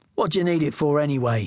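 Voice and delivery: ordinary delivery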